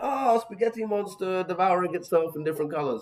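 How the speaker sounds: amused mock-puzzled tone.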